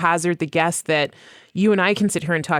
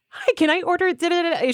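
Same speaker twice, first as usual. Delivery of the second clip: sudden jump to a very high voice; 12 semitones higher than usual. Retelling a friend ordering at Starbucks, the speaker imitates her voice going high. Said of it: "Her voice goes up five octaves".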